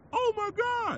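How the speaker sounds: shrill, very high, very loud yelled cry. Retelling how one of the toughest men reacted to the stabbing, retelling a yell. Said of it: "roughest yelled out".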